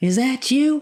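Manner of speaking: high, fast, loud mock Southern accent.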